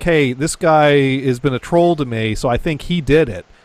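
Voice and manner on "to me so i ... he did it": ordinary talk, nothing marked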